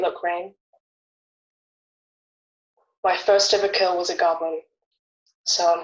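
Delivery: understated, restrained, subdued, low-key talk. Player in character speaks to another character as the fire dies: speaking quietly. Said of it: "And I just say quietly".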